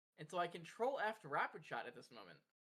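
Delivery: ordinary delivery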